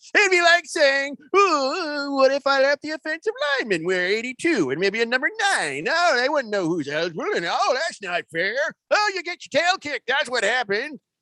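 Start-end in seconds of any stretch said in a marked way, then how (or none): 1.3-10.9 put-on old man voice. Quoting a quarterback's complaint in that old man voice: imitating Tom Brady as an old man. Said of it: "I just threw the voice on it".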